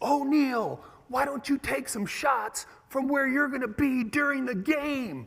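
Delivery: booming, shrill, bellowing shout. Recalling his head coach screaming at him in front of everyone, retelling a booming shout. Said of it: "a booming voice from way up in the bleachers".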